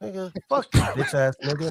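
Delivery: put-on, fake angry, furious outburst. Answering a comment that he is always mad: mock angry outburst. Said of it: "that's mad enough for you".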